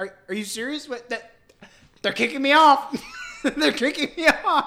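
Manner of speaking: put-on livid, stammering disbelief, very loud and rising. Retelling how Jeb Bush reacted to being cut off: imitating Jeb Bush livid. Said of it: "he is just absolutely livid".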